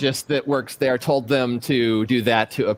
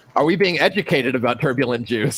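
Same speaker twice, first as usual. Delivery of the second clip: ordinary talk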